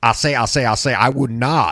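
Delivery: put-on cartoon voice with Southern accent. Describing how southern senators sound, do a Foghorn Leghorn voice. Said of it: "all of my southern senators kind of have a foghorn leghorn effect".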